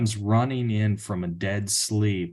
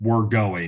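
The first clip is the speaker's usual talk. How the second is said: mock, firm, flat, final no-argument tone; 3 dB louder than usual. Retelling how his partner insisted on going for another test: imitating her firm no-question command. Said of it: "this is how she said this".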